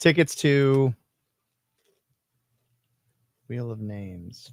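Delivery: gloomy, funeral-like tone. Naming the giveaway prize in a gloomy, funeral-like tone. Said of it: "Make it sound like a funeral happened".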